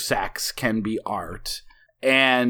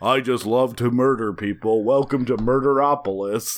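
put-on monster voice mumbling under the breath. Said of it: "he's mumbling under his breath".

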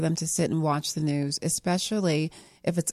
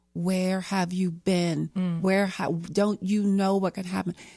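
panicked, frantic, screaming delivery; 2 semitones higher than usual. The speaker recalls a boy finally riding his bike up the street: retelling own screaming. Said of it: "And I was screaming".

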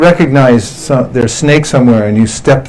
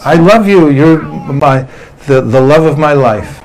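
plain

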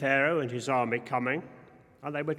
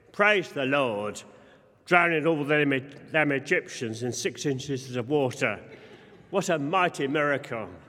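ordinary talk

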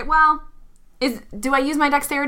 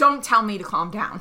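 ordinary delivery

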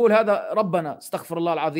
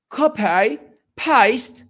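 overdone, exaggerated British English accent; 4 semitones higher, 5 dB louder than usual. Repeating the words to ask if British people really sound this way: exaggerated British accent. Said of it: "Don't you think this is exaggerated English?".

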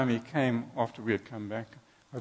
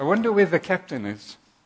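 put-on loud, high, carrying little-boy voice; 5 semitones higher, 7 dB louder than usual. Telling a story, quoting the little guy at the top of the stairs, in a loud voice. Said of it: "he says in a loud voice".

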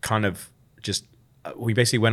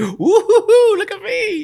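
put-on very high, very loud, very slow, drawn-out whoop; 9 dB louder than usual. Imitating Nate boasting about manual labor: Nate impression, roller-coaster whoop. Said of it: "like a fucking roller coaster".

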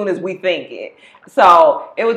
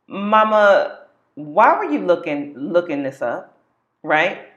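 mock earnest, stern, serious voice with a drawn-out word. Retelling her son questioning her, imitating Bryson's serious voice. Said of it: "I hear him in a real serious voice like".

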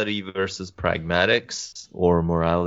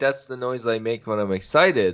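plain

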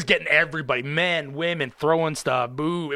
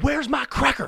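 put-on shrill, high-pitched, drunken yell; 10 semitones higher than usual. Retelling how a very inebriated Dennis Rodman came up: imitating Dennis Rodman yelling. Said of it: "a very inebriated Dennis Rodman comes up and yells".

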